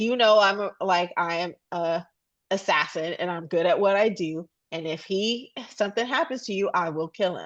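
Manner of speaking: ordinary talk, nothing marked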